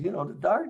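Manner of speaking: whiny, high-pitched complaint tone. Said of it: "kinda whining back and goes".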